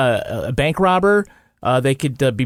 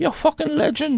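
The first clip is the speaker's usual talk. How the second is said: put-on Irish accent, pitched very high; 14 semitones higher than usual. Asked by the host to repeat the eulogy line, in fake irish accent. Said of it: "say it in your fake Irish accent".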